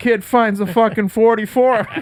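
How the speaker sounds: put-on Pittsburgh accent. Retelling a film's opening detective exposition: imitating Johnny Russo's Pittsburgh accent. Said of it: "This Pittsburgh accent".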